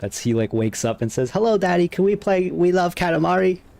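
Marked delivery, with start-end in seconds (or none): 1.3-3.6 put-on high, pitched-up little kid voice. Impersonating Jeff Gerstmann's impression of his kid waking up, Jeff Gerstmann's kid voice. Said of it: "That's my impression of Jeff Gerstmann doing his impression of his kid. ... it's just a, a kid voice".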